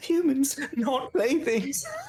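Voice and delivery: high, slow, mocking laughter through the words.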